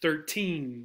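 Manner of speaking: put-on thirteen with stress on second syllable teen. Contrasting two numbers to avoid miscommunication: stress on second syllable of thirteen. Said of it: "the emphasis is on the second syllable".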